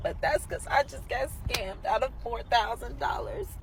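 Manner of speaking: crying while talking, tearful. Telling viewers about being scammed, crying while talking. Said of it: "I know I'm right here crying".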